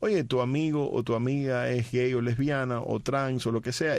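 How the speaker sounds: plain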